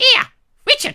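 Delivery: very high, loud, screeching woman's voice. Retelling an invitation from Cynthia, imitating Cynthia's screeching voice. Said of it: "stop screeching at me, woman".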